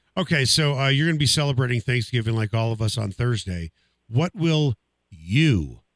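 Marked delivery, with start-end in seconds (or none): 5.1-5.7 heavy emphasis on the word you. An interviewer asks a guest about Thanksgiving cooking, stressing the word you. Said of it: "emphasizing the word you".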